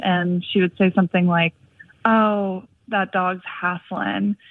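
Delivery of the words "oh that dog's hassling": put-on very slow, drawn-out Southern accent. Retelling what a woman would say on seeing a panting dog, imitating her Southern accent. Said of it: "in her Southern accent".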